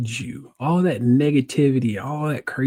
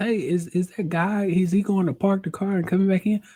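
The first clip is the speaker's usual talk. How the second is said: light, slight, put-on small-town country accent; 6 semitones higher than usual. Retelling what a woman asked you about your Uber, little country accent. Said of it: "doing all these little country accents here".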